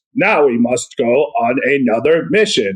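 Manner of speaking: stiff, mechanical, robotic cartoon voice. Describing how the parents in the cartoon talk, robotic He-Man and She-Ra parent voice. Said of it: "It's very robotic".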